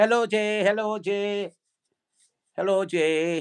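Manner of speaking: put-on Vietnamese-accented woman's voice. Explaining that Lucy's voice comes over the Bluetooth, imitating Lucy's Vietnamese-accented voice. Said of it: "you'll hear a Vietnamese voice".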